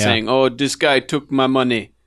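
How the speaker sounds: mock, put-on Jamaican accent. Recounting a man complaining that a guy took his money, fake Jamaican accent. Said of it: "fake jamaican accent guy".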